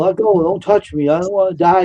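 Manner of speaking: acted-out sobbing, tearful, crying voice. Retelling how a grown man begged while crying: imitating someone crying. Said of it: "he was crying".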